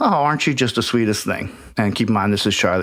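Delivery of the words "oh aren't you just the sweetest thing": put-on Southern American twang on every word. Retelling a phone call with Stacy in Charlotte: imitating a Southern twang. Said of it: "everybody's got that Southern twang thing".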